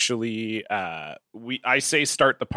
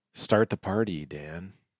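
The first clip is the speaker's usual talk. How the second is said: slow, low, hushed, nervous creeping dread; 5 semitones lower, 6 dB quieter than usual. Asked to say the cue line to a co-host with slow creeping dread. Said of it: "slow creeping dread".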